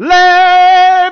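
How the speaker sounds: all-out screaming, very high, very loud and shrill. Retelling screaming while re-recording with a neighbor nearby: retelling own screaming. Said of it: "just screaming".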